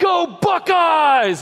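acted-out shrill, piercing, very high, loud yell. Retelling a commercial where the guy bails from the car: imitating someone yelling. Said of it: "and he yells".

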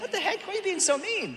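defensive tone, voice shot up very high. Retelling her own reply to him, retelling a defensive high-voiced reply. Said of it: "I was like defensive".

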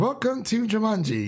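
high, canned-sounding game-announcer voice. Retelling a movie line from the announcer guy: imitating the announcer guy. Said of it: "the announcer guy. He's like".

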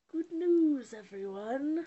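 very loud, high cartoon character voice. Challenged to imitate a Futurama character, the speaker tries one: Futurama character impression. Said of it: "I was trying to think of somebody to do".

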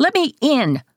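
shrill yelling, pitched way up. Pounding on the bathroom door with his fists, yelling. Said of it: "he yells".

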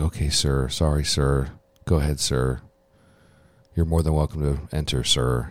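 timid, meek, sheepish, cowed voice. Retelling a show scene, a man answering his commanding officer: imitating a meek, sheepish reply. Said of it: "meekly and sheepishly".

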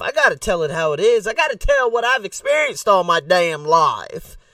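put-on rural country accent. Introducing the topic to the guys watching, country accent. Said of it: "That's my country accent".

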